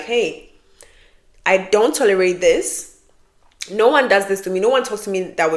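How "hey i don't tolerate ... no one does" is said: ordinary delivery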